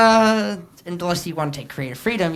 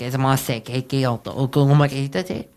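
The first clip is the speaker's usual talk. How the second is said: bad put-on Spanish accent, lower; 4 semitones lower than usual. Showing how a game master might fake a monster's language: bad fake Spanish accent. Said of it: "bad attempt of Spanish accent".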